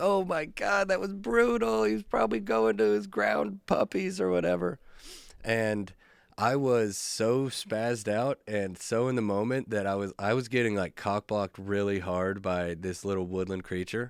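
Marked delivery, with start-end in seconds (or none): 0.0-4.8 tearful, very high-pitched sobbing voice. Retelling how a girlfriend reacted to a groundhog being hit: imitating someone sobbing. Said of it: "She's, like, sobbing".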